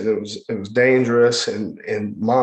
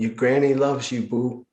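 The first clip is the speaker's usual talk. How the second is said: put-on Cajun accent, whispering; 3 dB quieter than usual. Retelling how his granny leaned close to comfort him, whispered Cajun accent. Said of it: "in this Cajun accent".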